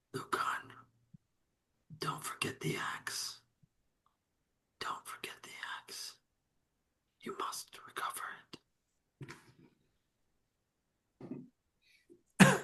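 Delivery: very hushed, ghostly whisper from beyond the grave. Voicing a dead father's spirit speaking to his son Lucan, ghostly whisper. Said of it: "whispering to you in that ghostly voice".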